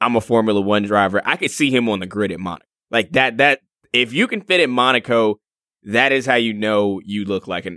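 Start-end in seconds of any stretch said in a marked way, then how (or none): none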